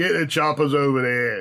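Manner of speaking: gruff-sounding orc voice with a Cockney accent. Explaining how they talk when playing orcs, cockney orc voice. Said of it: "Cockney accent for orcs".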